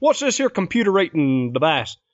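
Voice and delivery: put-on Texas accent, high voice. Joking with co-speakers about someone picking up a Texas accent, Texas accent. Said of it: "master the Texas accent".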